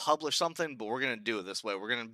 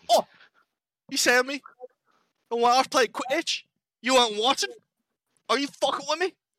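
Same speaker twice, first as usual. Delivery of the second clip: put-on New Zealand accent, much higher pitch; 13 semitones higher, 9 dB louder than usual. Acting out a bit for a listener, in a New Zealand accent. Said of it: "That's a really good New Zealand accent".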